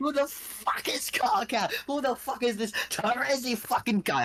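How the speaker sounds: very drawn-out, slow, thick laid-on Australian accent. Performing a put-on accent for friends after being asked to do it, swearing freely, in a thick aussie accent. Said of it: "Give me that thick Aussie accent".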